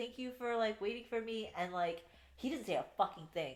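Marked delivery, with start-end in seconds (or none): 0.0-1.5 mock tearful, high, weepy crying voice. Summarizing a story, quoting the woman after Rowan finds her; imitating someone crying. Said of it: "she's like crying".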